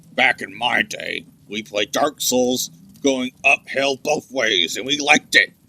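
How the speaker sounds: voice of a hulking war monster. Talking with another player during a game, speaker uses a Warhammer orc voice. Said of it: "Why are you talking like a Warhammer orc?".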